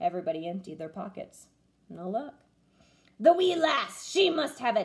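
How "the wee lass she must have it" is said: hollering pirate captain cry. A pirate, after everyone's emptied pockets turn up no map, hollered. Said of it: "Braidbeard hollered".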